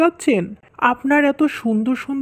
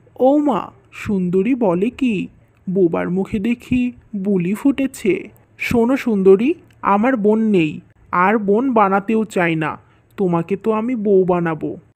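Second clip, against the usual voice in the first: plain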